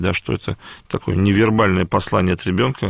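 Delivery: ordinary talk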